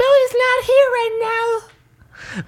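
put-on very high little girl voice. Pretending to be a little sister to avoid a parent: imitating Millie's voice. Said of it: "doing your impression of your little sister Millie".

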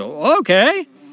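surprised clown voice. Telling a joke, voicing the clown caught off guard: surprised clown. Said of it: "Bobo the Clown's kinda surprised".

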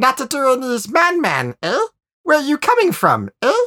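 put-on very high, curious, squeaky nudnik accent. Gashkis, leader of the colony, questions the newcomers; Gashkis's squeaky nudnik accent. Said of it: "in his curious, squeaky nudnik accent".

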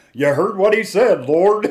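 very loud, high country preacher twang. Retelling what a man said during a prayer, in a country accent. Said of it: "he's kind of got a country accent".

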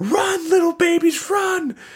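mock very high, drawn-out cry of horror. Retelling a cartoon scene where the caterpillar teacher's babies pop out: imitating a horrified cry. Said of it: "the genuine horror in his voice".

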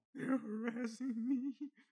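put-on shrill, very loud sobbing wail, high pitched. Mocking a tearful Instagram Live complaint: mock crying as Patrisse Cullors. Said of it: "Instagram Live crying like she was being attacked".

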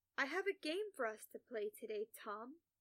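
usual speaking voice

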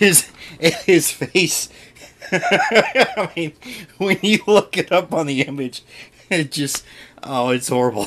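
high voice breaking into laughter on the words. Reacting to a comic book character's image, can't stop laughing. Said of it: "I can't stop laughing".

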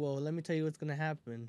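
ordinary talk, nothing marked

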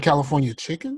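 question-like rise in pitch on California chicken. Pointing out how another speaker said the phrase, said like a question. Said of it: "he said it like a question".

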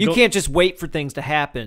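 ordinary talk, nothing marked

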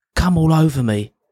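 acted-out yell. Recounting how an eleven-year-old shouted at a woman walking in; retelling a shouted line. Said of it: "And he shouted".

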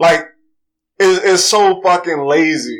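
ordinary talk

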